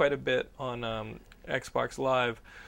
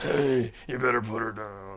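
raspy, throat-wrecked superhero voice; 3 semitones lower than usual. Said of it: "you sound like you're about to cough up a lung".

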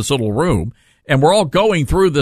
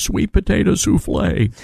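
high mumble to himself, under the breath; 6 semitones higher than usual. Imitating a man who kept mumbling to himself: mumbling to himself. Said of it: "the guy just kept mumbling to himself... it went just like this".

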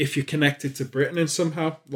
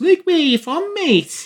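shrill, very high, loud put-on Scouse accent; 6 dB louder than usual. Retelling a meeting, the speaker imitates a man who started talking Scouser: Scouse accent. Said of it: "starts coming up and starting talking Scouser and goes".

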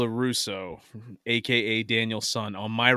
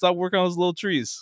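put-on Newark-accented kid voice at a higher pitch; 7 semitones higher than usual. Retelling how Daniel LaRusso talks in the original movies: imitating Daniel LaRusso's way of talking. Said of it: "the way he talks".

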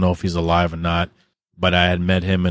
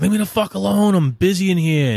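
play-acted, shrill, very high-pitched, freaked-out screaming; 13 semitones higher than usual. Retelling screaming at a parent through a locked door: imitating screaming at someone. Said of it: "I started screaming at her".

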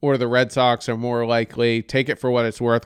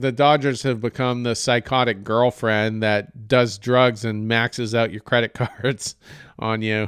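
ordinary talk

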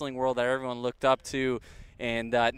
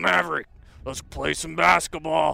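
raspy, creaky, rough voice; 4 semitones higher, 4 dB louder than usual. Retelling how a neighbor asked to play basketball: imitating Randy Savage's raspy voice. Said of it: "the raspiest voice ever".

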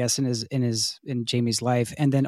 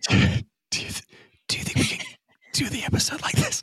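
whispered, much higher pitch. With a co-host holding a baby, the podcast host asks about recording this way, whispering. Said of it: "This is our whisper episode".

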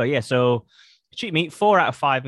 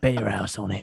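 put-on menacing whisper, lower pitch; 5 semitones lower, 4 dB quieter than usual. Acting out giving an old man betting tips: mock threatening whisper. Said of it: "threaten and, like, whisper betting tips".

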